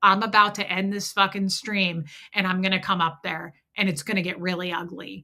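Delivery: ordinary talk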